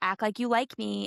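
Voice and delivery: put-on snotty tone. Retelling what she said at the game: imitating a snotty tone. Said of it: "she's saying it in such a snotty way".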